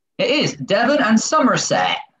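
put-on Somerset accent, sing-song, best effort. Quiz host confirming the answer for two contestants, in a put-on somerset accent. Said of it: "my best Somerset accent".

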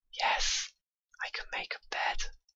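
barely-there, hushed whisper full of awe. Playing a game and finding out they can make a bed; whispering. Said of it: "I'm whispering because it's amazing".

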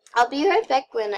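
voice breaking mid-phrase. Speaker talking to viewers in a game video, voice cracking. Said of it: "oh my gosh, my voice crack".

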